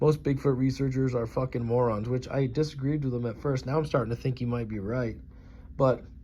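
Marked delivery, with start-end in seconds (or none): none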